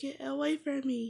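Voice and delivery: mock angry tone. Retelling what someone told the speaker: imitating an angry tone. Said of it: "like, an angry tone or something".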